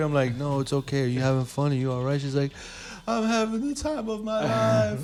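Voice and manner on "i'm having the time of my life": mock, very high, slow, tearful sobbing. Retelling what a drunk woman said, imitating someone crying. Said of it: "stop crying then".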